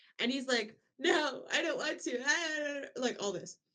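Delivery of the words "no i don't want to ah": mock pitiful pleading tone, very slow. Retelling a scene where a character refuses to fight: imitating pathetic pleading. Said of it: "he's being all pathetic".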